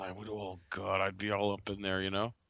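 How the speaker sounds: whispered speech. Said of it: "He's whispering".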